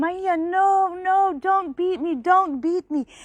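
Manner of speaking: high, sobbing, tearful, frightened begging. Acting out a frightened boy's words in a story: imitating fearful crying. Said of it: "and he was crying".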